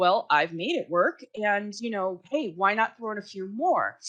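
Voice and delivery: ordinary delivery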